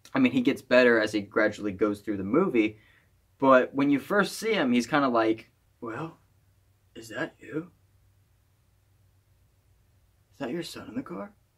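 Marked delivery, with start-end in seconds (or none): 5.8-11.4 very quiet, soft, indifferent delivery. Retelling a movie scene, not-great Bruce Willis impression. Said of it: "that wasn't a great impression of Bruce Willis".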